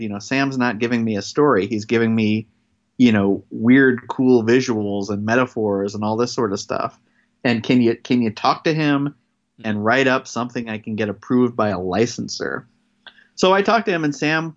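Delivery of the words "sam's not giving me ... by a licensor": ordinary talk, nothing marked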